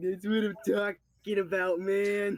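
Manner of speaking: high, loud, super nasally gamer voice. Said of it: "that super nasally gamer voice".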